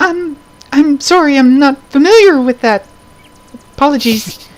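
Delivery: tiny, piping, very high-pitched voice. Asked if she can help remove the curse, the little voice pipes up. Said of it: "the little voice pipes up".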